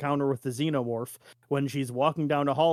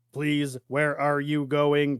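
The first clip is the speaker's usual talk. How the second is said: monotone, flat, scratchy droning robot voice. Imitating how they have to talk, in a flat scratchy robot voice. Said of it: "all like monotone and like scratchy".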